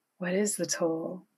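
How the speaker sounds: usual speaking voice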